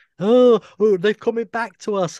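mocking, high, loud dim-witted voice. Mocking online commenters: imitating moronic commenters. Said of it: "comment like morons".

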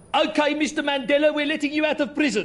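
put-on Geordie-accented delivery. Asked to hear a Geordie accent, a performer obliges: Geordie accent. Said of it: "Let's hear a Geordie accent".

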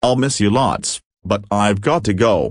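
ordinary delivery

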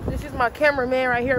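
ordinary talk

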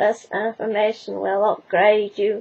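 very dodgy robot voice. Reading the Cyberman's line from a magazine contents page, in a dodgy Cyberman voice. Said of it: "Very dodgy Cyberman voice".

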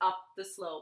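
plain

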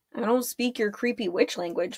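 ordinary delivery, nothing marked

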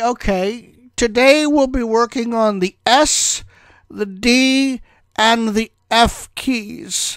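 high-pitched teacher drone, very slow, "D" drawn out. Retelling what the typing teacher said: imitating a high-pitched teacher voice. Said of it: "he had a high-pitched voice".

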